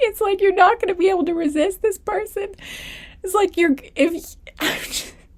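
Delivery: words breaking up with laughter. A reader giving a reading to viewers, laughing while talking. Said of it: "I don't know why I'm laughing so hard".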